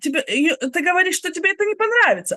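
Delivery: very high-pitched yelling. Speaker re-enacting how they yelled at him: retelling own yell. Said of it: "А я прям кричу на него".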